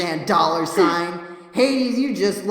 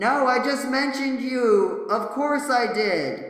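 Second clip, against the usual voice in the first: very slow, stretched-out call pitched high; 6 semitones higher than usual. Reading a character's line aloud in a group script reading: yelling. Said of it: "I'm yelling this one".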